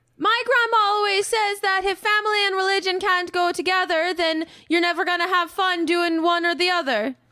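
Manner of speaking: worked-up outburst. A roleplay character, who later says they feel upset, is yelling. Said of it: "Why are you yelling".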